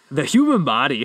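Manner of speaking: put-on Irish accent, barely there, failed attempt. Retelling a man who announced an Irish accent, then tried it; attempted Irish accent. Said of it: "ready for this Irish accent?".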